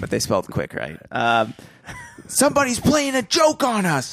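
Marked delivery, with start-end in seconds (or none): 2.3-4.1 angry, higher pitch. Reading a story aloud, a boy speaking about a joke: angry. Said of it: "Frank said angrily".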